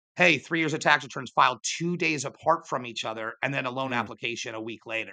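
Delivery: plain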